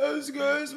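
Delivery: very high put-on scientist voice. Acting out a student calling a professor: stereotyped scientist student voice. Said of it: "like that".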